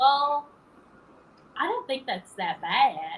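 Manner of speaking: slow, light, put-on Southern accent. Speaker retells what their Nashville mom said on the phone; little Southern voice. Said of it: "She said in a little southern voice".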